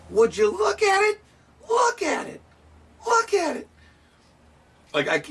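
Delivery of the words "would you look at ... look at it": very high voice, rising upward. Imitating a pipe maker from his videos: imitating a pipe maker's high voice. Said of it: "I can't do the high voice he does".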